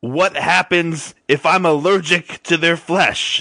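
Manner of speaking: huge, shrill yell at top of lungs. A player's character tries to smack someone across the face, yelling as loud as possible. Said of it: "In the loudest voice I can possibly do".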